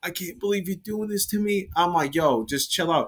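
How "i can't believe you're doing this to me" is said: high, sobbing, tearful crying voice. Retelling a woman's reaction during a fight after the Uber, imitating someone crying. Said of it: "she started crying".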